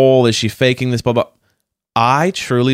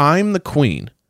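mock completely earnest, dead serious, zero irony; 3 semitones higher than usual. Retelling how she walks up and speaks: imitating her dead serious tone. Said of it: "a dead serious".

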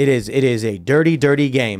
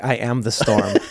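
acted-out whisper, lower pitch; 4 semitones lower, 3 dB quieter than usual. Retelling a story of the president answering the deep state, acting out a whisper. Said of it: "The president whispered back".

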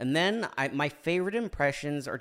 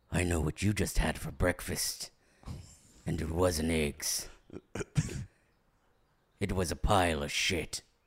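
very low, dropped-down voice; 8 semitones lower, 3 dB quieter than usual. Joking about someone's breakfast, doing a Liam Neeson impression. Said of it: "That was my Liam Neeson impression".

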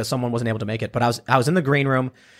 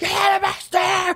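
put-on screaming, higher pitched. Retelling a viral vape shop video, imitating someone screaming. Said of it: "the guy was screaming".

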